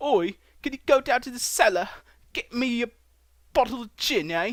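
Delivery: bad, put-on British accent in a very high pitch. Joking about the word cellar versus basement: terrible put-on British accent. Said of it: "oh, that's terrible".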